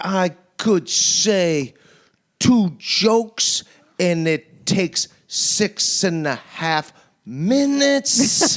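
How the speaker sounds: mock, very slow drawn-out delivery. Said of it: "He talks like this".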